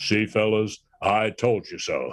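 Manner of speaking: slow, deliberate, drawn-out delivery. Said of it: "he said in that big booming voice of his".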